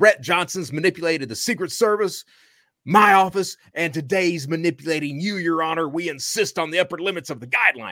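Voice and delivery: acted-out, heated, screaming outcry. Retelling the prosecutor at the speaker's sentencing, imitating him screaming. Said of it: "he's screaming at the top of his lungs".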